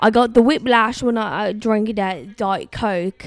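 put-on British accent. Joking while watching a match set in the UK: put-on British accent. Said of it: "we can talk like this because it's in the U K".

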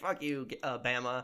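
ordinary talk, nothing marked

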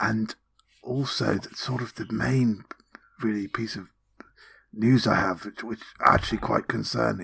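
chatty, hushed, rambling half-whisper. Playing a character reporting findings in a roleplaying game, half-whispering in character.

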